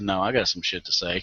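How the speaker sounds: ordinary talk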